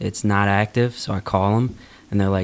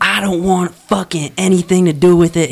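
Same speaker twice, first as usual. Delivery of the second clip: put-on woman's screaming, higher and louder; 10 semitones higher, 8 dB louder than usual. Retelling a wife screaming at her husband in another room: imitating a woman screaming. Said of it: "her screaming back".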